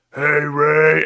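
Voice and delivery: very loud, big, booming voice. Quoting the older brother from the Ray Romano show: Brad Garrett voice. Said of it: "you're getting a lot of, like".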